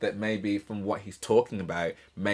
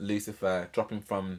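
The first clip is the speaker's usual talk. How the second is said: ordinary talk, nothing marked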